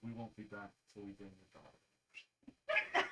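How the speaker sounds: very low, slow, cool and composed voice. A player in character replies to a woman while leaving, cool and composed. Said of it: "cloak up very cool".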